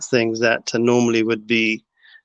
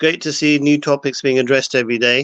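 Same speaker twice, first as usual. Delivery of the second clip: ordinary delivery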